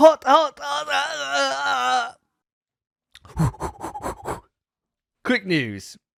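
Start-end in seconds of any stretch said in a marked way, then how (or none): 0.0-4.4 very high, creaky, drawn-out wailing yelps. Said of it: "drinking a cup of coffee, but it's way too hot".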